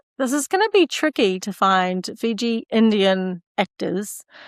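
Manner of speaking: ordinary delivery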